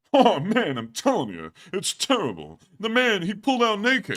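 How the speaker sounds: very high, loud, swooping comic voice. Telling a joke about a man who pulled a gun: Rodney Dangerfield voice. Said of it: "I'm in the character of Rodney Dangerfield".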